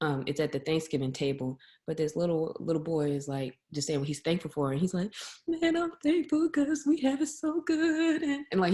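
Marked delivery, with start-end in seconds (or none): 5.5-8.2 very high, drawn-out, tearful sobbing voice. Retelling a little boy's Thanksgiving thanks: imitating a child crying. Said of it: "he's really, like, crying".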